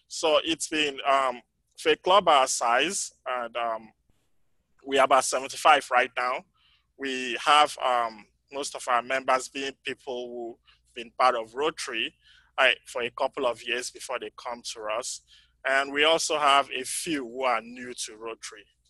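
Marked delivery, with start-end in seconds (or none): 0.1-6.4 louder, projected voice. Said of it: "my voice tends to fade out".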